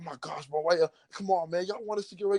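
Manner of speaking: mock heated, angry, defensive outburst, pitched high. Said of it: "angry to a point where he's like".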